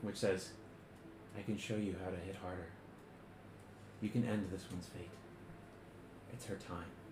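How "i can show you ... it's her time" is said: whispered, barely voiced, very soft and eerie. Game narrator voicing a voice heard behind the player's left ear, whispering. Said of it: "you hear a whispering voice".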